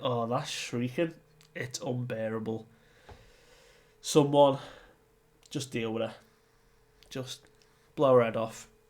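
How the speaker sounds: ordinary delivery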